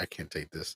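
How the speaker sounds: very quiet, hushed, seething fury. Retelling what was said during an argument: retelling own furious words. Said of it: "really mad, f-, furious, and I was like".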